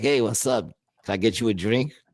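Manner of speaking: put-on creepy, flirtatious voice. Acting out approaching a woman at a bar: put-on creepy pickup voice. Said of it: "you go to any chick, you're like".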